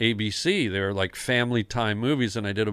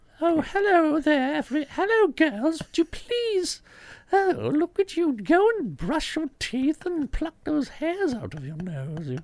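very high, swooping, squeaky stately British lady voice. An actor recalls the voice of a character they played, Margaret Thatcher meets Mickey Mouse voice. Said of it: "kind of a Margaret Thatcher meets Mickey Mouse".

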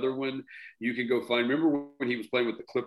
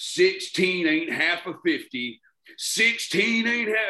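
put-on loud, high, acted drunken hollering; 6 semitones higher, 5 dB louder than usual. Retelling a drunk guy sitting behind them, imitating his really loud yell. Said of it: "And he's yelling".

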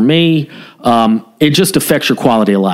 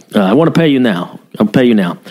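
heavily broken English phrasing. Retelling a stopped driver insisting on paying: imitating broken English. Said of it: "very, very broken English".

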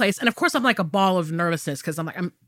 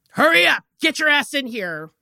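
mock nasty, mean, high scream; 5 semitones higher than usual. Describing being called in at the doctor's: retelling a mean scream. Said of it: "somebody just screams out your last name, like all mean".

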